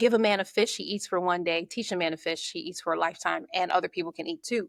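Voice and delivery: ordinary talk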